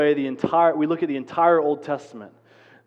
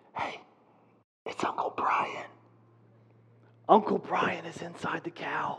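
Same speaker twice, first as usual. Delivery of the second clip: hushed, breathy whisper, very close; 8 dB quieter than usual. Retelling calming a scared child at a party: imitating own whisper. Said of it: "I bent over to whisper into his ear".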